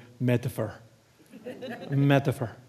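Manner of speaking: the word metaphor said in an Irish brogue. A speaker gives an answer as Dom Crossan would say it, Dom Crossan's Irish brogue. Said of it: "as Dom Crossan would say in his Irish brogue".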